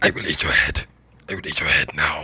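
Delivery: rasping character voice. Performer recording a character's lines after being asked for more rasp. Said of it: "More rasp".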